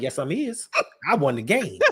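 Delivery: put-on Southern accent. Retelling a player's reply to trash talk: imitating southern speech. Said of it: "that's what you say in the South".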